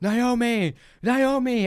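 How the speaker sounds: very high, loud, searching yell. Recapping a story where a character searches for Naomi, retelling his yell. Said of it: "Mike is yelling".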